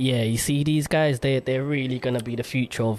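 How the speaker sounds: usual speaking voice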